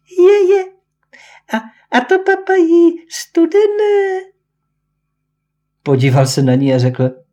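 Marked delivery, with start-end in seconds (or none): 0.2-4.3 thin, very high, tiny voice, spoken slowly. Narrator reads Kačka Baňatovic's remark to the boys, thin high little voice. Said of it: "řekla takovým tenunkým, vysokým hláskem".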